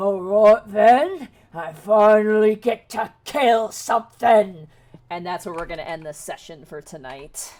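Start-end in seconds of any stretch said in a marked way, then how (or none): 0.0-4.7 loud, slow, booming, pig-like demon voice. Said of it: "it goes".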